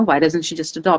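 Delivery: ordinary delivery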